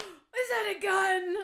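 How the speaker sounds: bad acting, very high, very loud, very slow. Imitating the mom in a movie asking about a gun: imitating a badly acted line. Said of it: "the way she says it, though, it's so bad".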